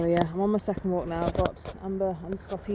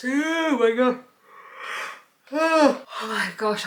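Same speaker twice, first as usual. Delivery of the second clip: very slow exclamation stretched through a yawn; 5 semitones higher, 4 dB louder than usual. Still tired before doing squats, talking while yawning. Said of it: "I'm yawning so much right now".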